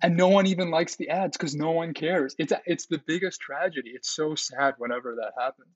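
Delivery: impassioned voice. Complaining to another speaker about ads nobody enjoys making: passionate. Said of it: "the passion in your voice".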